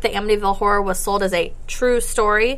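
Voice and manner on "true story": mocking, sarcastic air-quote tone. Describing a book sold as a true story, sarcastic air quotes on 'true story'. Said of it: "which I'm saying in air quotes. I hope you could hear that in my voice".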